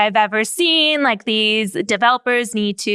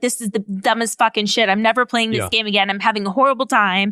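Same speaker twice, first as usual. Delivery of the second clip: ordinary talk, nothing marked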